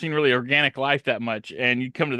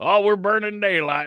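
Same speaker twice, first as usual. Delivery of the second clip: put-on old-timer grandpa voice, pitched up; 7 semitones higher than usual. Describing to a co-host how he talks: imitating an old grandpa voice. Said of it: "He kind of talks like a like your grandpa".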